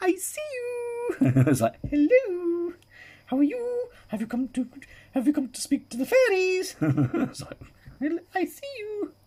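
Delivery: put-on squeaky, swooping, very high, sing-song funny voice. Acting out a weird random thought of a voice greeting someone: funny voice. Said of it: "it's just a funny voice".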